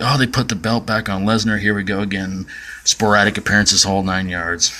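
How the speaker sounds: ordinary talk, nothing marked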